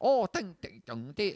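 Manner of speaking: high, up-and-down mock Mandarin accent, swooping tones. Showing a mock mandarin accent learned from a comedian: imitating a mock mandarin accent. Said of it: "it's the up and down".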